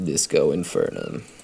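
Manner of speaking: deep, low, hushed, breathy delivery. Picturing how the character says it in canon: Harry's deep, low voice. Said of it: "delivers this in a really succinct, deep, low voice".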